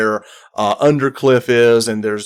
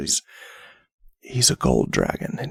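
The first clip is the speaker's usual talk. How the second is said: hushed, confiding whisper, very close to the ear; 10 semitones lower, 7 dB quieter than usual. A character leans forward to share a secret in the listener's ear; leaning in, whispering. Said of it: "he leans forward and whispers in the ear".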